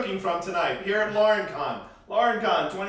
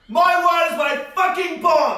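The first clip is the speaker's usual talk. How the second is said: shrill, loud, ranting chef-style voice, belted out; 10 semitones higher, 8 dB louder than usual. Reading a character's line aloud that he crows, do it in a Gordon Ramsay voice. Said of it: "I'll do it as Gordon Ramsay".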